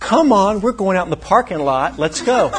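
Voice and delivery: heated, loud, high-pitched screaming. Retelling what a man screamed an inch from the speaker's face in a hospital room: retelling a scream. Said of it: "he starts screaming at me".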